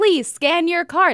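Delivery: loud, high-pitched screaming robot voice. Retelling what the self-checkout robot says: imitating a screaming checkout robot. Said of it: "'cause it's screaming at me".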